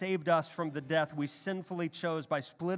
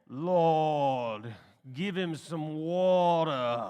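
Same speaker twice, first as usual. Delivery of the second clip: deep, very slow preacher voice, lord drawn out; 4 dB louder than usual. Retelling what a man in the seat behind him said, in a deep preacher voice. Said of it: "I hear a deep preacher voice".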